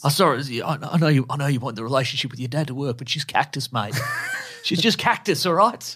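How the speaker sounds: put-on Australian accent. Showing how he talks, in a put-on australian accent.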